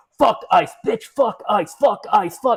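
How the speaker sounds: acted, very high, angry punk-rock scream. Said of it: "a very angry fucking kind of screaming".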